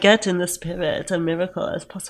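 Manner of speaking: put-on German accent with slow drawl. Quoting a movie line they love, the speaker does a drawling German-accent impression. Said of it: "when you're doing that voice".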